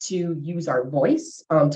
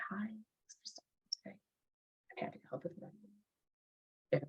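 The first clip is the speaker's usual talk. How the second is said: limp, passive, half-whispered, hushed mumble; 3 semitones higher, 21 dB quieter than usual. Demonstrating different ways to greet a customer: passive delivery.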